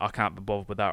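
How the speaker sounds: ordinary delivery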